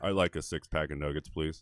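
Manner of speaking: put-on, fake, exaggerated macho voice. Retelling ordering at a drive-through when anxious, putting on a butch voice. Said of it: "we gotta butch it up".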